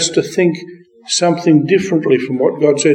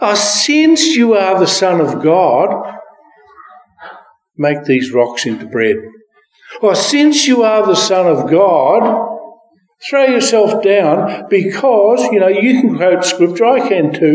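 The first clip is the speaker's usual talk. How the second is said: constant sneer, with the word "God" drawn out. Speaker imagining how Satan spoke to the Son of God, put-on sneering Satan voice. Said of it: "I think he would have had a sneer in his voice".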